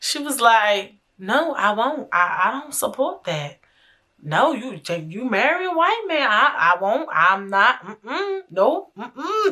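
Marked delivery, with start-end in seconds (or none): 1.2-9.5 put-on very sweet Southern accent, grandmother's voice. Retelling grandma's reply about coming to the wedding: sweet Southern grandma accent. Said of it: "she got the sweetest Southern accent voice".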